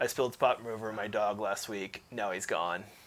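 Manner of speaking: low, flat, careful monotone. Speaker imitates a comedian telling one of his jokes, Steven Wright monotone. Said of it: "he's very like this. He talks very monotone and careful".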